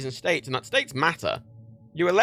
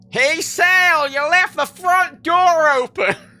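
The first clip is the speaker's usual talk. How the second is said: over-the-top rural Southern drawl, loud, high, shrill, slow; 13 semitones higher, 10 dB louder than usual. Mocking the one American accent, in an exaggerated Southern American accent. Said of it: "there's only one American accent. It's fucking just aggressively southern and hillbilly".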